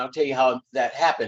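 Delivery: ordinary delivery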